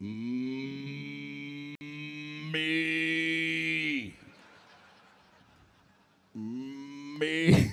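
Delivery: drawn-out, self-absorbed mooing cow voice. Comedian tells the crowd his first impression, egocentric cow impression. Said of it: "My impression of an egocentric cow".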